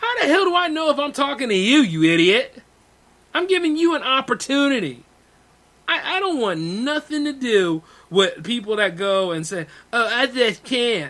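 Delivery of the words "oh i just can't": mocking whiny pretentious voice, much slower. Mocking people who make excuses, in a mocking whiny pretentious voice. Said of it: "pardon me for like when I do that voice".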